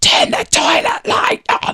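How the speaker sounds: loud, voiced stage whisper. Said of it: "that's not whispering".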